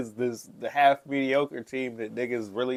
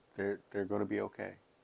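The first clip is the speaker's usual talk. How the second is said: somber grim tone, lower and quieter; 4 semitones lower, 11 dB quieter than usual. Answering whether the team will be fine: somber, like giving bad hospital news. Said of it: "Why you sound like you at the hospital".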